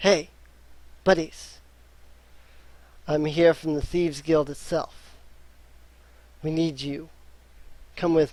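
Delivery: hushed whisper. A shady individual steps into the prisoners' cell at night, whispering. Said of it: "he whispers to you and says".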